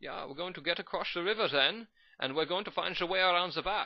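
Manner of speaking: clumsy attempted Dutch accent, high pitched. Narrating a battle replay, trying a Dutch accent again: attempted Dutch accent. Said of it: "I can't do Dutch".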